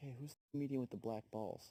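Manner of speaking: mock, angry, irritated, pissed-off teacher scolding. Telling a joke, quoting the teacher: imitating an angry teacher. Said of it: "the teacher turns around all pissed off".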